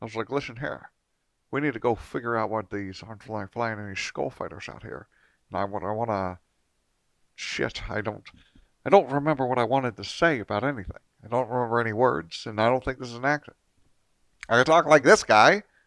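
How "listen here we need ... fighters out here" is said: put-on Scottish accent, much quieter. Retelling what he said, the speaker does a Sean Connery impression. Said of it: "Sean Connery".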